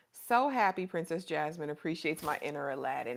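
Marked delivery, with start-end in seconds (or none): none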